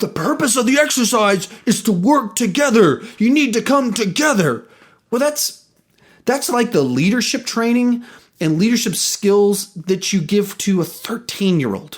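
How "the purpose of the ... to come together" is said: mock yelling, slower. Recounting a leadership exercise, quoting the man running it: retelling a yell. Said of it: "And he's just yelling".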